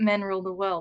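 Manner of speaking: normal talking voice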